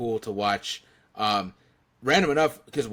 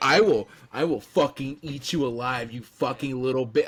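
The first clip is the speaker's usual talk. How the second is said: furious, angry, menacing tone; 2 semitones higher than usual. Retelling a wrestling promo where The Rock threatens someone: imitating an angry The Rock. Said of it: "he's just pissed, fucking pissed".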